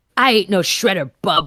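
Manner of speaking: gruff growling voice. Narrator reading a story; a silhouette in an alley answers a turtle: gruff growl. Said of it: "the silhouette growled back".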